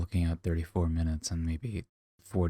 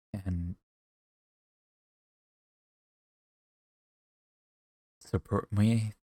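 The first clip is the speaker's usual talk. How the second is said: tearful, words pushed out through tears while crying; 3 semitones higher than usual. Asking viewers for support at the end of a video, crying. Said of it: "it feels weird to say that while I'm crying".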